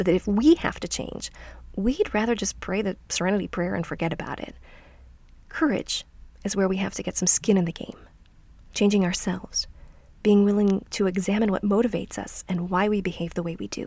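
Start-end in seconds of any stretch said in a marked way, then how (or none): 0.0-1.3 heavy stress on we, said louder. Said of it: "not if our circumstances have to change".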